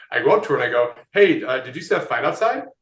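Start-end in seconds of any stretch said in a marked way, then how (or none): 1.1-2.6 mock jittery, nervous, hesitant delivery. Retelling a first approach to a girl at a walkathon: imitating own nervous pickup line. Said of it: "I'm so nervous".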